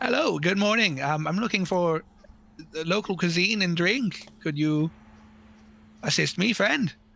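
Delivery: bright, happy, very cheerful, friendly tone. A player's character approaches the barkeep, very cheerful Ensign Tomalot. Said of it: "very cheerfully just be like".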